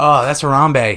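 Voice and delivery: normal talking voice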